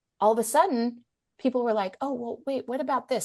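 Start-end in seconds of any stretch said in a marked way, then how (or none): 2.0-3.3 soft hush, voice kept down. Retelling how friends at lunch began asking about subjects never talked about: imitating a quiet hushed voice. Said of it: "in the quiet, hushed voice".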